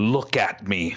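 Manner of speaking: level, firm, steady, no-nonsense delivery. Narrator voicing a character as fog thickens in the room, said firmly. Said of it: "he says firmly".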